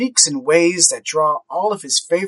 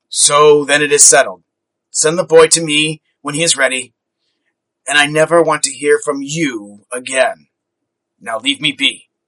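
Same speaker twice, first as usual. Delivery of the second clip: gruff, rough-edged delivery; 2 semitones lower, 3 dB louder than usual. Scrooge looks back at his books and dismisses his old friend: gruff. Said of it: "spoke gruffly".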